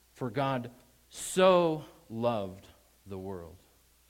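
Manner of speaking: heavy emphasis on the word so. Reading John 3:16 with a different emphasis: stress on so. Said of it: "put the emphasis this way".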